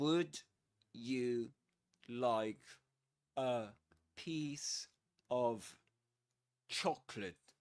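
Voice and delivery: deliberate, slow, halting, careful word-by-word enunciation. Demonstrating a sentence before its connected-speech version, saying it slower. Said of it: "Let's say it slower".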